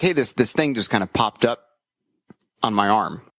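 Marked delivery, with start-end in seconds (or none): none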